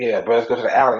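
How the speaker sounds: plain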